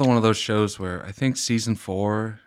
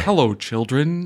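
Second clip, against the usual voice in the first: pitched-up toy train voice; 5 semitones higher, 3 dB louder than usual. Mocking an actor's American accent, comparing it to that Thomas the Tank Engine voice. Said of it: "It's like that Thomas the Tank Engine voice".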